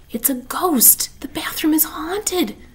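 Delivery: shouted whisper. A girl answers another girl's question, whisper-shout. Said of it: "Ivy whisper shouted".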